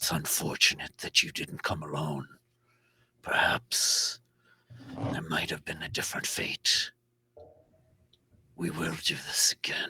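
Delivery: hushed, whispered creature voice. Voicing a wounded creature speaking into a player's mind: voicing the wounded creature. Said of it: "you hear its voice in your mind again".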